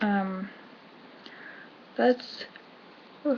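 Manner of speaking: talking through a yawn. Speaker breaks off mid-sentence to apologize, yawning. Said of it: "I'm yawning because I didn't sleep".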